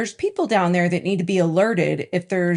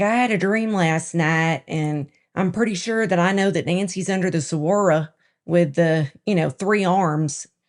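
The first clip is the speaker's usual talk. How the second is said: put-on Ozark-style rural country accent. A podcast co-host imagines someone offering a doubtful tip: country accent. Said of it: "That's my country accent".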